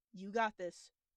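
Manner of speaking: as serious as possible, forced. Voicing a character telling his companion to trust him: as serious as he can muster. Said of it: "as serious a face as he can muster and just goes".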